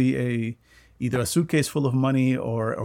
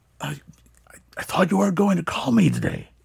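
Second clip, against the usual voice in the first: put-on, mock-quiet hushed voice, pitched higher; 6 semitones higher than usual. Retelling a phone call, acting out the man on the line, imitating a hushed voice. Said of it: "it sounds like he's like trying to be quiet".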